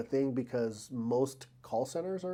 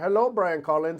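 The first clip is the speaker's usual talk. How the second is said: put-on raised, high Indian-English accent; 5 semitones higher, 6 dB louder than usual. Imitating how Indians say a greeting, in an Indian accent. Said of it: "Indians would be like".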